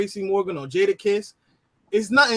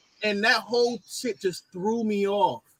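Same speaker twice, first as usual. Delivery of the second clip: normal talking voice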